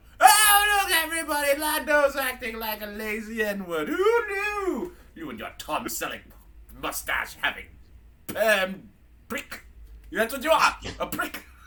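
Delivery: tipsy put-on British robot voice. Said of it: "that's C three P O drunk".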